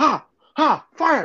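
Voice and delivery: high, mock panicked old person voice. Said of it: "He's like".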